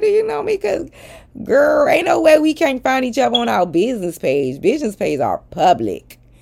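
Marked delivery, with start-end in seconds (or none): 0.0-4.6 very high, lighthearted, playful kidding tone, acted. Retelling asking a girl to her face, acting out a joking tone. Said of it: "But I was saying it in a joking way".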